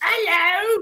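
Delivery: very high, squeaky, poorly done put-on British accent. Showing how the impression would have sounded, in a crappy British Monty Python voice. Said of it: "I would have done it in a really crappy British accent".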